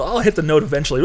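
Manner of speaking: normal talking voice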